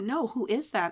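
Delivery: ordinary talk, nothing marked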